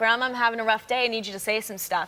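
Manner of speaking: plain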